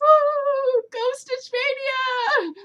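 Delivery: very high, drawn-out cheerleader whoop. Saying how they will support others doing Stitch Mania: mock cheering. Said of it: "I will be cheering you guys on".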